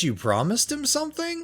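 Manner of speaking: put-on puzzled, baffled tone. Retelling what a store manager said to the speaker: retelling a confused tone. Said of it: "in a very confused tone".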